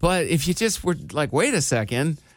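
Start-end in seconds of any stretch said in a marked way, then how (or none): none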